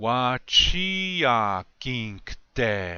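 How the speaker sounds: slowed, deliberate, each word carefully laid out. Leading learners in a repeat-after-me phrase drill: said a little bit slower. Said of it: "I'll say it a little bit slower".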